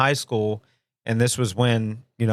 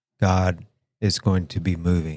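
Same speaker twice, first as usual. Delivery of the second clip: droning, low, flat, one-note preacher-like delivery; 5 semitones lower than usual. Retelling a youth conference sermon, imitating a monotone preacher. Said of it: "he's talking very monotone".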